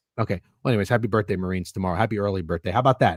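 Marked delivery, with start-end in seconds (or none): 0.9-2.7 insincere, half-hearted, unconvincing, low and soft. Speaker addressing the marines, insincere birthday wishes. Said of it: "That didn't even sound sincere".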